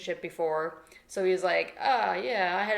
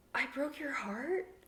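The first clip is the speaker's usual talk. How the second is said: mock hushed, innocent little voice, soft and high; 5 semitones higher, 9 dB quieter than usual. Mocking a character who broke his love's heart, in a mock innocent little voice. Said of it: "don't put on that innocent little voice".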